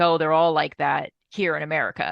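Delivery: normal talking voice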